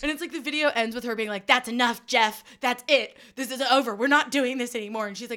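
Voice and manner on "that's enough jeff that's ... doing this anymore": play-acted furious, loud, angry outburst. Retelling a prank video ending, imitating an angry mom. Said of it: "she was so angry at him".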